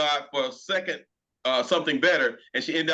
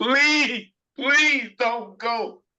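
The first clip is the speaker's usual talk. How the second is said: high-pitched, drawn-out, begging pleading; 8 semitones higher, 5 dB louder than usual. Imitating how guys bargain on their knees: imitating a man begging on his knees. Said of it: "I had to do that".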